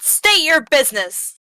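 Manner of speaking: put-on shouting. Calling out to an approaching figure in character: yelling in character. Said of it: "And I yell out".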